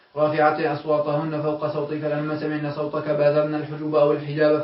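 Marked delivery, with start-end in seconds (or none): none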